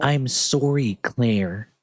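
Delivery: high-pitched, nasal, awkward voice. Mocking how the character says sorry: Steve saying sorry. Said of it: "Freaking hate the way he says sorry".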